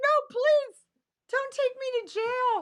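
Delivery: very high, very loud sobbing, crying voice. Retelling a plea not to be taken to jail: imitating someone crying. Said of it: "Crying like a little bitch".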